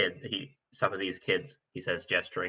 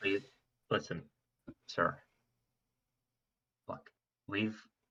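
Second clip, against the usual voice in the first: speaking more quietly; 8 dB quieter than usual. Urging a staring man to listen, in a quieter voice. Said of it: "says in a quieter voice".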